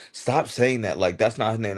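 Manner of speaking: put-on exasperated, frustrated five-year-old child voice. Retelling a five-year-old's complaint about a character's name: imitating a frustrated child. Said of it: "he would get so frustrated with me".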